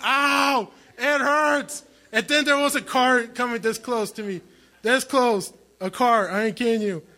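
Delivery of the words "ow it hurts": acted, hurt little cry of pain, mild. Retelling lying flat on your back in the street, retelling screaming in pain. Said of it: "I'm like screaming".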